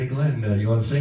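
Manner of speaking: ordinary talk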